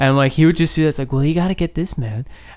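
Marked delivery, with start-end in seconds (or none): 1.1-2.2 gentle, soft-spoken voice through the nose. Imitating how a man used to talk, in a soft-spoken nasal voice. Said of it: "He kind of talked out his nose, but it was very soft spoken. It was very like this".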